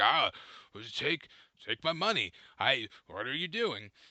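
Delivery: put-on angry, confused bewilderment. Retelling their reaction to an employee, acting out angry confusion. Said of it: "like a angry confusion".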